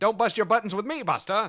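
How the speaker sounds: Mid-Atlantic accent. Showing a favorite accent with a sample line: Mid-Atlantic accent. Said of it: "I love that Mid-Atlantic accent where you're like".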